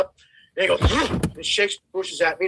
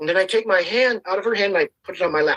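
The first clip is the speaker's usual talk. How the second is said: ordinary delivery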